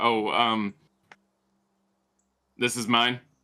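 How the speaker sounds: underwhelmed, deflated, let-down, disappointed tone. Narrator voicing Lily as she is handed an average scimitar: disappointed Lily. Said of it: "she looks very very disappointed".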